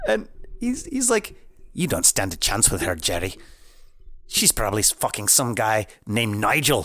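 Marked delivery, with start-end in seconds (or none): 1.8-6.9 put-on cat voice with a Scottish accent. Quoting a cat character from a movie: Mister Whiskers Scottish accent. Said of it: "awesome Scottish accent going through it".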